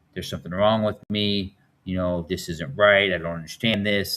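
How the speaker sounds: normal talking voice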